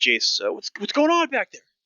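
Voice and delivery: very high, loud shout heard from a distance. Voicing someone shouting from the front: shouting from a distance. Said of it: "You hear a shout from the, the front".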